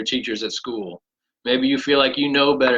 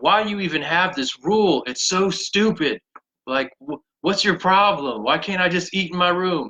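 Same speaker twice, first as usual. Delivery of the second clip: acted, high, exasperated, frustrated, fed-up yell; 5 semitones higher than usual. Retelling arguing with dad as a teenager: imitating own past yelling. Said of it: "I remember just yelling at my dad".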